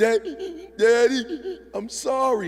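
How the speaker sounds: mock tearful little girl voice, very slow. Retelling a daughter's words as she apologizes: imitating crying daughter. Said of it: "and my girl's crying".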